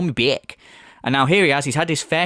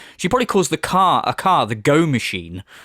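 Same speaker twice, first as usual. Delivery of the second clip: usual speaking voice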